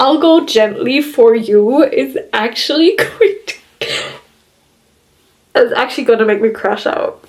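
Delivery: tearful, crying while talking. Reacting to a story chapter she just read, the speaker talks while crying. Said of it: "I'm crying".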